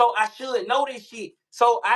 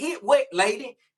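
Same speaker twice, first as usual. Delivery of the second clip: mock fed-up, irritated and mad tone. Retelling a confusing drink machine and a lady's instructions: retelling getting mad. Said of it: "I'm getting mad now 'cause I'm like".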